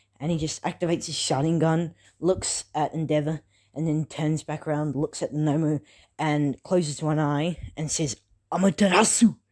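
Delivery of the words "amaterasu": clumsy, loud put-on anime-style battle cry. Narrating a fight scene, speaker voices the character's attack call, bad impression. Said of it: "sorry, that was a bad impression".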